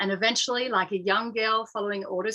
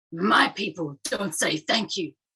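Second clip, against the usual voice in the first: put-on aggressive voice; 3 semitones lower than usual. Retelling a man's reply in the car after being thanked, mock-aggressive tone. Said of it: "with an aggressive tone".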